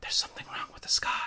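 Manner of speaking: rushed, quick, breathy whispered line. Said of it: "she just whispers".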